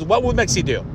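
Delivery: ordinary delivery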